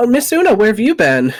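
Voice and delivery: startled, astonished, high surprised exclamation. Narrating a game, voicing the halfling front door attendant greeting Miss Una: surprised. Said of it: "She just looks very surprised".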